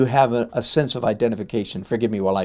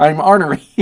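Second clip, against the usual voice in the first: ordinary talk, nothing marked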